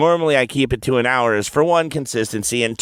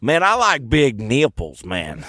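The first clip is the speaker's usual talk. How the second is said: put-on thick Tennessee accent, slow, heavy Southern drawl. Retelling what a smart guy from tennessee said, in a heavy southern accent. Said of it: "he's got a heavy Southern accent".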